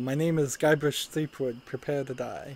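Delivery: normal talking voice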